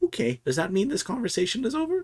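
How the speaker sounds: put-on sweet little old woman voice, very high, swooping. A game narrator voices a woman looking between the players, in a sweet old lady voice. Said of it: "you hear in like a sweet old lady voice".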